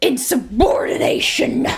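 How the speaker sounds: put-on old-fashioned military general's voice. Joking about how a word sounds in your head, old-timey general voice. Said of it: "you imagine it in like an old-timey general voice?".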